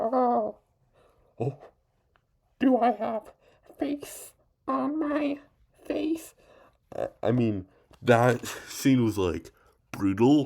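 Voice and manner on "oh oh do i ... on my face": very high, slow, drawn-out clown voice. Talking about the dancing clown, then acting out a scene: Pennywise impression. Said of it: "let me just do this".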